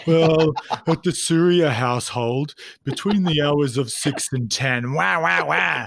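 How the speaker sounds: somber rocking-chair grandpa voice. Mimicking the other speaker blaming his wife: mock somber old man tone. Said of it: "this like somber tone, like old man on a rocking chair".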